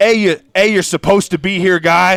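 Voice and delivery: hollered yell. Asking the other speaker what one would yell, acting out a yell. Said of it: "Is that what you yell at him?".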